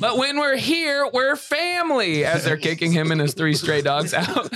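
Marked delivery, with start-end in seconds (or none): 0.0-2.2 put-on high yelling, voice raised. Acting out a bit about being kicked out of a restaurant: imitating A J yelling. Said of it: "you'll see A J yelling".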